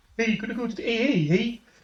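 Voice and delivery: high, cartoonish Canadian accent. Speaker suggesting another cartoon accent they could have used: Family Guy Canadian accent. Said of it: "we could have done Family Guy Canadian".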